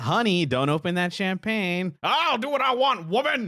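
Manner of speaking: acted sitcom-style bickering. Calling a situation sitcom-like, the speaker plays both spouses: mock sitcom couple quarrel. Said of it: "this is the most sitcom".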